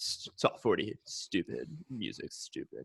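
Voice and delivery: low, soft, scornful, dismissive sports radio guy voice.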